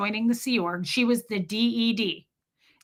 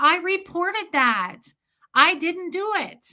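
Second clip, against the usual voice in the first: mock high, pleading, begging shout; 8 semitones higher than usual. Retelling chasing dad down the stairs, pleading: imitating own past yelling. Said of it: "I'm yelling that".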